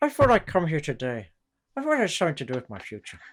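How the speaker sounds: put-on very thick, swooping, sing-song Irish accent. Imitating an actor's overdone Irish accent in a film: Michael J. Fox's Irish accent. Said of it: "his Irish accent was very Irish".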